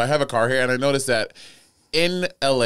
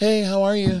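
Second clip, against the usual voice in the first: gently feminized, slightly raised voice; 7 semitones higher than usual. Trying out a feminized voice on request, slightly higher feminized voice. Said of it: "Like about 3 semitones".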